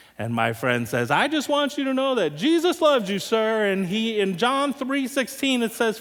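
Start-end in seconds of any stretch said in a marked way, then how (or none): 1.1-3.7 hollering, higher pitch. Retelling how a friend hollered through a closed door: imitating someone hollering. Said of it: "holler through the door at this guy".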